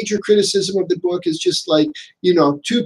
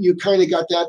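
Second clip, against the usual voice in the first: usual speaking voice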